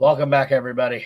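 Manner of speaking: out of breath, winded, catching breath. Host coming back from a break, welcoming everyone back: out of breath. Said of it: "Let me catch my breath".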